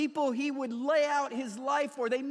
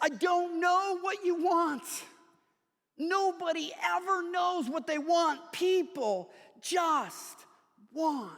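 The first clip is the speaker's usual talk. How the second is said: mock fed-up, exasperated screaming losing temper; 4 semitones higher than usual. Retelling a novel's scene where a dad loses it at his son: imitating a father screaming. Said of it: "He's screaming at the universe".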